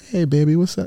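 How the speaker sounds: gentle, easy, eased-off tone. Acting out how a father greets his daughter, in a softer voice. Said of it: "you're softer there".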